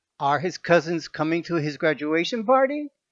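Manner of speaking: pitch rises on the word party. Teaching yes-no question intonation in english, rise on party. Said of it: "The voice goes up".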